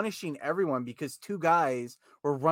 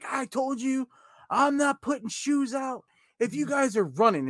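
play-acted, very high-pitched shouting; 11 semitones higher, 3 dB louder than usual. Retelling a wait in the shoe area, imitating the lady yelling. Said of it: "the lady starts yelling".

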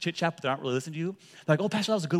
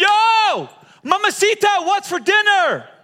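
frustrated angry shout, raised and high-pitched; 11 dB louder than usual. Telling a joke, a husband calls to his wife a third time, imitating an angry shout. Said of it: "raises his voice, he's angry, he's frustrated".

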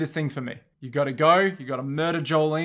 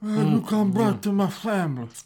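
put-on mumbling mob boss voice, pitched higher; 5 semitones higher than usual. Trying a voice with cotton balls in the mouth: Marlon Brando voice. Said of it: "put some cotton balls in my mouth".

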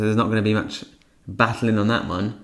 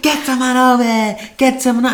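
mock very high, loud, shrieking scream; 5 dB louder than usual. Retelling what Nancy screamed from the window, imitating Nancy screaming. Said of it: "Cue to Nancy screaming in the window".

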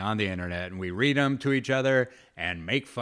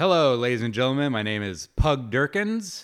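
play-acted, confident, excited big showman voice; 4 semitones higher, 4 dB louder than usual. Recalling his old stand-up opener, the speaker is acting very confident. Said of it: "very confident".

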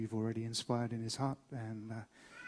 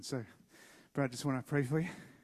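out of breath, winded; 3 semitones higher than usual. Introducing a great friend before praying for him, out of breath. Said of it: "I'm out of breath".

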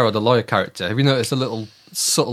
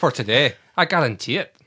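put-on Scottish accent; 2 semitones higher than usual. Speakers take turns quoting a line, this time in his scottish accent. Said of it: "Can anyone do his Scottish?".

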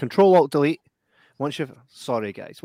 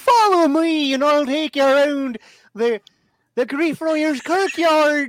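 very high, loud, squeaky little woman voice; 12 semitones higher, 5 dB louder than usual. Recounting a walk in a kirkyard, the speaker impersonates a woman they met: impression of the wee woman. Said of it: "I'm going to impersonate the wee woman that we met".

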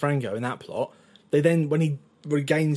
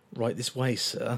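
mock repulsed politeness, lower and quieter; 3 semitones lower, 6 dB quieter than usual. Retelling a jazz bar waitress seating a customer: imitating forced polite disgust. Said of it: "biting down her tongue and, like, trying not to vomit".

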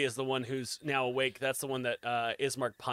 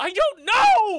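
very high, very loud, shrill frustrated scream; 10 dB louder than usual. Voicing a character who is pushed to frustration: screaming in frustration. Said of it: "She screams at you and kind of pushes".

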